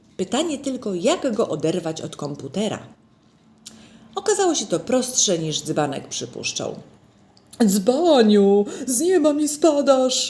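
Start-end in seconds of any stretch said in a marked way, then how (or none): 7.7-10.3 long, high, drawn-out shout. Mr Grzegorz greets Dzbanek scratching at the door, shouting. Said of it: "Wrzasnął pan Grzegorz".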